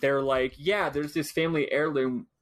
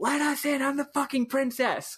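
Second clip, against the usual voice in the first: very high, full-throated, acted-out yell; 12 semitones higher than usual. Retelling a game scene where the princess demands entry to a trial: imitating Marlo yelling. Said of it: "she yells and does her special sprite where she's yelling".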